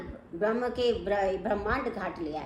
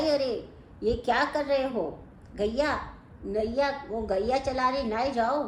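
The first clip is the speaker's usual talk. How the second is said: ordinary talk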